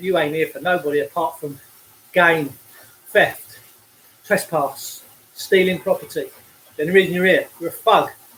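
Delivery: ordinary talk, nothing marked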